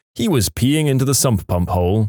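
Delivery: ordinary delivery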